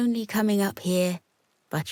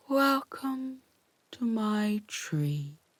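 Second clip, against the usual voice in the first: drawn-out, unhurried, slow sloth voice; 3 semitones higher, 5 dB quieter than usual. Reading a story, two sisters on a branch are greeted by a sloth in a long, slow voice. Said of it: "they heard a long, slow voice".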